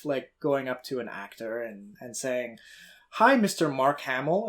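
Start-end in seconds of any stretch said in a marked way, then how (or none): none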